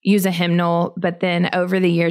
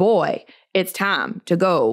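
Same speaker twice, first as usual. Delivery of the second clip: slow, drawn-out cartoon voice with swinging pitch. Imitating her dad's way of talking, in a Foghorn Leghorn voice. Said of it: "that Foghorn Leghorn Looney Tune cartoon voice".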